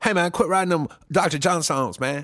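dapper, cosmopolitan Cajun accent, pitched high. Pitching a new comedy character to the audience, doing the Cosmopolitan Cajun voice. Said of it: "It's called Cosmopolitan Cajun".

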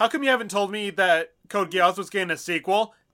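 usual speaking voice

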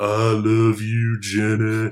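very slow voice, every word drawn out. Teasing a girlfriend named Jenny: Forrest Gump voice. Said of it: "a Forrest Gump impression".

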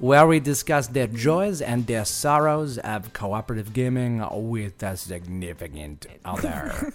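clumsy put-on French accent, inconsistent vowels. Repeating the show intro for a co-host: bad French accent. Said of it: "I never proclaim myself to be good at doing a French dialect or accent".

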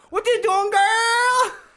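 high, loud mock Mexican accent.

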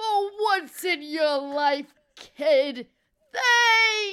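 put-on very slow, high, loud, drawn-out grandpa voice. The speaker recalls hearing his grandfather's voice in his head: imitating his grandfather. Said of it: "I hear my grandfather's voice".

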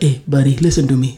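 put-on low voice in his own accent. Retelling going up to ask for extra hours, putting on his accent. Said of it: "I did go up there with my accent".

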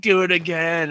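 put-on pissed-off tone. Retelling a movie scene where she orders it to fire again: imitating someone pissed off. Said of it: "all pissed off".

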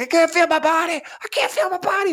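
put-on very high shrieking, screaming cry. Retelling how a dying buddy screamed while the speaker couldn't help: retelling a scream. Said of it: "he's screaming things like".

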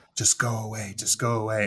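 loud, hushed half-whisper that still carries. Retelling what a movie character said while hiding: imitating someone half-whispering. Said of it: "because he was whispering".

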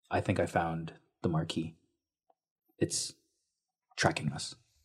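softly spoken. In a game, a character tells companions uncovering bodies about a creature, quietly. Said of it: "And she says quietly".

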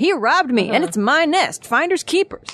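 pleading, put-on Southern accent. Acting out a TV-court style defense in a quote: Southern accent. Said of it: "you added in the Southern accent".

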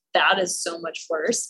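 normal talking voice

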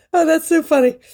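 high, teary voice, crying with laughter. Recalling something that cracked them up on the way to the car, laughing to tears. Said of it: "I'm crying".

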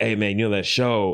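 acted, very melancholy, sad tone. Retelling a friend asking about a show during audition help, retelling a melancholy line. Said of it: "he's saying it very melancholy".

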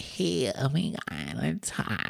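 fake Valley Girl vocal fry. Contrasting it with her deeper, serious voice, do the Paris Hilton Valley Girl fry voice. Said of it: "like Valley Girl fried to the house voice".

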